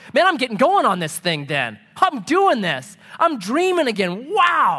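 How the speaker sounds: mock childlike giddy wonder, swooping pitch.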